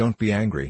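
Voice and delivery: ordinary talk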